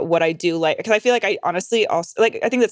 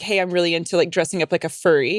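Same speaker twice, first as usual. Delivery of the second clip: ordinary talk, nothing marked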